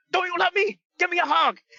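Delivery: very high, hollered shouting. Retelling a wrestler shouting at his opponent: imitating a shout. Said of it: "shouting at him".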